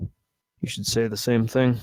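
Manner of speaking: slow, hushed grumbling under the breath. Voicing a character as the player walks away, muttering to himself. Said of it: "you hear him mutter to himself".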